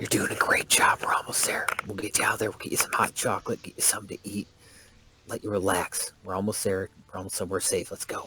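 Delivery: breathy, hushed whisper under the breath. Voicing Ben reassuring Liz on the way to safety: whispering. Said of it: "Ben kind of whispers to Liz".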